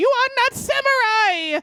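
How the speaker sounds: shrill, screeching scream pitched way up. Retelling a man in court punching his own head, imitating his scream. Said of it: "he is screaming".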